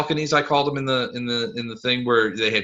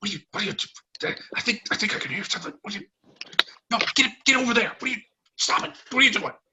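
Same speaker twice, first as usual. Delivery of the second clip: hushed, hoarse, raspy whisper, higher, quieter, faster; 10 semitones higher, 4 dB quieter than usual. Narrator voicing figures heard through the doors, in hushed, hoarse voices. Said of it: "like hoarse voices".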